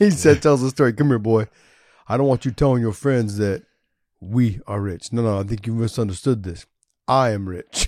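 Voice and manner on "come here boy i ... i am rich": put-on deep voice. Retelling what a parent told his boy, imitating a deep voice. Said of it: "his deep voice".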